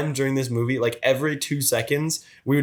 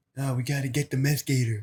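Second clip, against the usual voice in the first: low, quiet mumble with half-swallowed words; 5 dB quieter than usual. Imitating how everyone in the movie speaks: low, mumbly, quick speech. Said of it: "really low, really mumbly, quick".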